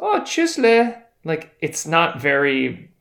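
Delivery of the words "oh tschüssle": put-on very high-pitched voice with Austrian accent. Imitating a grocery store cashier saying goodbye: soft Austrian accent. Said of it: "It actually has really soft tones".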